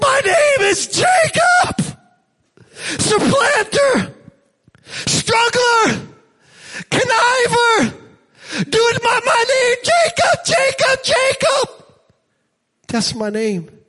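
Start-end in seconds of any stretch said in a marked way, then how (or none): 0.0-11.8 mock very high, swooping, loud, drawn-out crying. Picturing a man wrestling with God, acting out a loud cry. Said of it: "And Jacob says with a loud".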